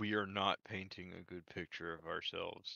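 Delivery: whispered voice. Whispering a remark to a fellow player's character during a tense meeting: whispering to a party member. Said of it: "I will whisper to Hanzo".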